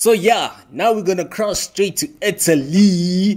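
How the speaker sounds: very high, thrilled and excited, "Italy" stretched. Speaker handing over to Italy, apologizing for getting carried away; excited. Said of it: "sorry about my excitement".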